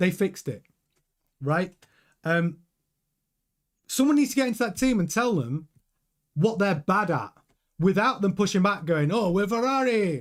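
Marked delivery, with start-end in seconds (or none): 9.1-10.2 clumsy, terrible put-on Italian accent. Imitating a team pushing back on criticism, in a terrible Italian accent as Ferrari. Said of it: "That's my Italian accent. Sorry, terrible".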